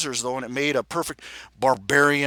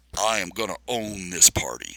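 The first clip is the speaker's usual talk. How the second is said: deep, gravelly, rumbling voice-changer basso tone; 6 semitones lower than usual. Talking to his reflection through a voice changer, the narrator speaks in a rumbling gravel basso. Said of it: "the voice changer turning my voice into a rumbling gravel basso".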